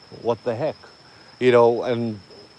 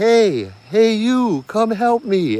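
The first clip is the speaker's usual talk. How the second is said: put-on slow, very high, drawn-out little girl voice; 10 semitones higher than usual. Retelling a voice that called up asking for help: little girl's voice. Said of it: "that little girl's voice".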